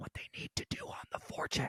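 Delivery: hushed, quiet whisper. Retelling a remark made quietly to a friend, imitating own whisper. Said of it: "I was whispering to Merle".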